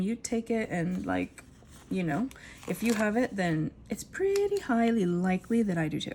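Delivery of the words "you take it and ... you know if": ordinary delivery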